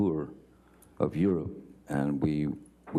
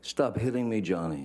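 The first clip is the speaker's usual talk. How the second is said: mock frantic, high, freaked-out, upset cry; 6 semitones higher than usual. Recounting a woman screaming at Johnny from the couch, imitating a freaked-out, upset, high-pitched scream. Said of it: "she's screaming in, in her best um, freaked out, upset voice, high pitched".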